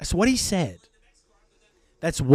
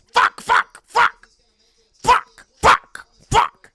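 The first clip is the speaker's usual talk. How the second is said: high-pitched shrieking impression. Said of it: "This is my impression of Joey Logano".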